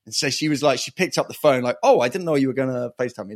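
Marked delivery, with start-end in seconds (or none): 1.8-3.3 terrible, weird fake Swiss and New York blend. Retelling how she answered the FaceTime call, terrible Swiss New York accent. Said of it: "That's a terrible impression of her, but there's this weird Swiss New York accent".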